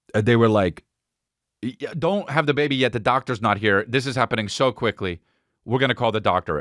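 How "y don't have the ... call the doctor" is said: usual speaking voice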